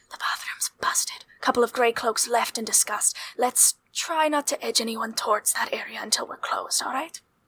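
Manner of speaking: offhand, casual whisper. While still serving people, telling other employees something, in a casual whisper. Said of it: "whispering casually to other employees".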